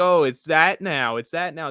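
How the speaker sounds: plain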